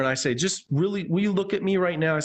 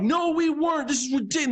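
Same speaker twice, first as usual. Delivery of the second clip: put-on very high, fed-up, frustrated yelling; 10 semitones higher than usual. Retelling how the other students protested: imitating yelling. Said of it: "They're, they're yelling at me".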